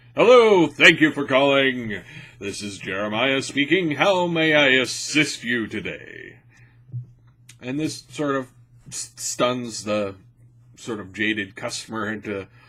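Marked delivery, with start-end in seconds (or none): 0.2-6.4 loud, carefully and clearly enunciated voice. Showing how calls are answered at work: well-enunciated phone greeting voice. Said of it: "when I answer the phone, it's".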